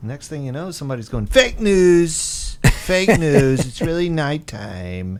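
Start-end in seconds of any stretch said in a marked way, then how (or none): 1.3-5.2 very slow, deliberate, drawn-out character voice, every word stretched. Imitating a public figure's reply about the sky: good Trump impersonation. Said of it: "That was a good Trump impersonation there".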